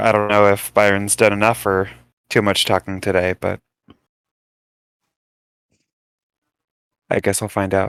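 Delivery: whispered aside, quiet and breathy. Leaning in to Cass in character to say something quietly: whispering.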